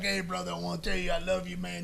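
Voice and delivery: put-on thick Southern accent, soft and quick, rattled off. Jamie, partying, first comes in and greets someone, in Jamie Dundee's thick Southern accent. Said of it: "he's got this thick Southern accent".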